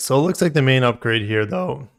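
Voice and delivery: breaking, cracking voice. Reading out model-year changes to chat, voice cracking. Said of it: "you heard me crack".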